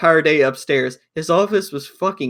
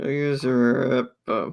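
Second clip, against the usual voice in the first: mock mumbled muttering under breath, quieter; 3 semitones lower, 5 dB quieter than usual. Retelling how he admitted someone was right: imitating muttering under breath. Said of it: "he just says it under, under his breath".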